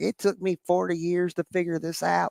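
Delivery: put-on rural American accent. Quoting a TikTok guy with a strawberry beard: imitating a thick country accent. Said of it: "this thick accent".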